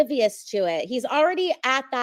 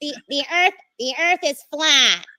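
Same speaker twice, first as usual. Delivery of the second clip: loud, heavily nasal put-on voice; 3 semitones higher, 5 dB louder than usual. Taking a turn imitating the other speaker, imitating a nasal voice. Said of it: "you have like a nasally voice".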